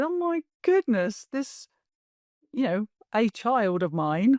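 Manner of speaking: crying, overwhelmed, high-pitched and drawn out. A parent recalls being reduced to tears by their daughter's words; retelling own crying. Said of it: "I was just like crying, going".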